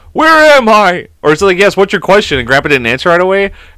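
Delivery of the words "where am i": loud, high-pitched yell, as if carrying far. Retelling a family story about a yell from the other room: imitating Marshall yelling. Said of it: "Marshall yelled from the other room".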